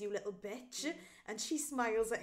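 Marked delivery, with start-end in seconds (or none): 0.0-0.9 quieter, put-on muttering under the breath. Recounting a scene at a ball, retelling words muttered under breath. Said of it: "under his breath says".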